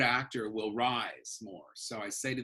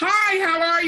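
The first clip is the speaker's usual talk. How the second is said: shrill, very high, loud, nervous voice; 14 dB louder than usual. Recalling an early Star Search appearance, imitating own old high voice. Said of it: "My voice was so high".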